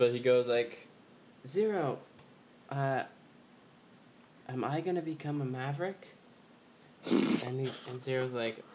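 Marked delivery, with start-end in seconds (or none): 1.5-6.1 put-on girlish voice, much higher pitch. Retelling a scene where X talks to Zero, in X's girlish voice. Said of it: "X has, like, a girl's voice".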